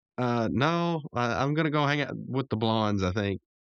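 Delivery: ordinary talk, nothing marked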